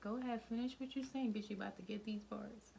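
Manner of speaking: cheesy put-on tone, corny and taunting. Trying out a line to use in an argument: corny mock argument taunt. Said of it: "that sounded corny coming from you".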